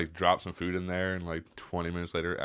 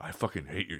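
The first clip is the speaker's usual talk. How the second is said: mock-aggressive man voice, quieter; 3 dB quieter than usual. Retelling a guy at a buddy's house while drinking, imitating an aggressive guy. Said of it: "got really aggressive with me".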